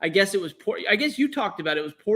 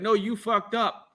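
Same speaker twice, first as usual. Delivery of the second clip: panicked, alarmed outburst; 3 dB quieter than usual. Talking about Vinny, the speaker quotes his reaction, imitating Vinny's panic. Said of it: "you can hear the panic in his voice".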